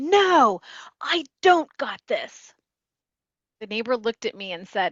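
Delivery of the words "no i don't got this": put-on, very slow, loud, high, stretched-out yell. Retelling how a man yelled back at a neighbor; retelling a loud yell. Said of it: "immediately yelled back at an even louder pitch".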